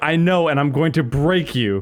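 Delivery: angry, mad, threatening tone. Retelling a friend's threat during a game: imitating someone mad. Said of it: "He was so mad".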